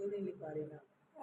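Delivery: ordinary talk, nothing marked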